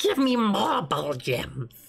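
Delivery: put-on wired character voice. A streamer voicing a game character, in a Yoda voice as if on crack. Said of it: "It's kind of like a little bit of Yoda, but as if he was on crack".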